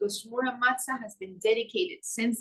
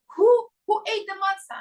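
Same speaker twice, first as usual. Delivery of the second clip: very high, loud, horrified shriek; 10 semitones higher, 7 dB louder than usual. Retelling finding matzah missing before the Seder: imitating own scream. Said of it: "I screamed out".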